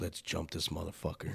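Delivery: hushed aside, very close. Retelling what a buddy said coming up by his ear, said right by someone's ear. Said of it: "he comes up by my ear".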